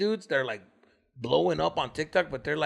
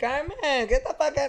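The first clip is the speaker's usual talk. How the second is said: mock girlish voice, much higher; 11 semitones higher than usual. Speaker mimics a TikTok guy who talks like a girl; imitating a guy who talks girlish. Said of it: "like the guy that talks like a girl".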